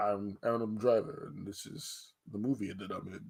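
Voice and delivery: deep baritone voice. Tell a friend why you will watch the movie, doing an Adam Driver impression in baritone. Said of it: "That's my Adam Driver impression".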